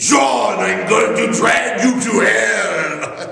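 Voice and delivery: mock deliberate, threatening sinister drawl, "hell" drawn out. Speaker recalls grabbing john by the shoulders and speaking: retelling a sinister voice. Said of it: "in my most sinister voice that I could come up with".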